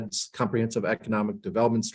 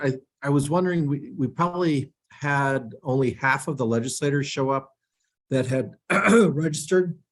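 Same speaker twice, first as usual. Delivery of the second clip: choked-up voice catching with emotion; 4 semitones higher than usual. Starting the legislative breakfast debrief at a meeting, getting choked up. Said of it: "I'm getting choked up already".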